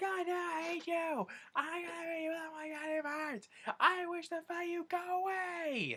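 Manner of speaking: mock very high screeching, stretched out long. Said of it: "just screaming".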